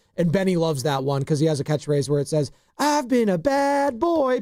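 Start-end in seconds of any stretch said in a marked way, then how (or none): 2.8-4.4 squeaky, very high, slow, drawn-out cartoon voice. Quoting a catchphrase from a South Park voice actor, in an Eric Cartman voice. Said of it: "like an Eric Cartman voice".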